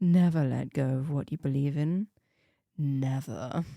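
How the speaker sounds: sultry, seductive voice. Reading a game character's closing lines aloud: sultry voice. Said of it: "that is a sultry voice".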